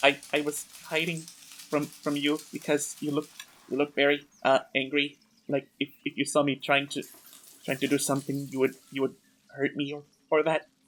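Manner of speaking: very tiny, soft, timid little voice. Voicing a hiding creature answering a player: very tiny voice. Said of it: "she says in a very tiny voice".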